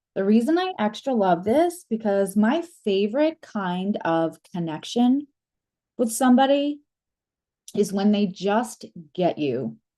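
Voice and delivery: emotional voice, close to crying. Explaining why a gift from someone special means so much, on the verge of tears. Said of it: "I'm gonna cry".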